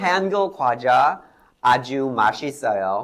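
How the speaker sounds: Korean with fake American-style pronunciation. Pretending not to speak Korean, reading a sentence in American-accented Korean. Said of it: "미국식 발음으로".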